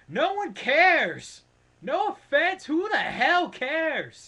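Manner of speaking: pumped-up shouting, shrill, very loud, high-pitched. Ranting to viewers about a wrestler coming back, yelling. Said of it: "I know I'm yelling".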